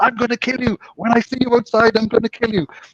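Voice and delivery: high, screaming, shouting voice. Retelling a casino story, quoting an angry player: imitating someone shouting threats. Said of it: "he was shouting and screaming at me".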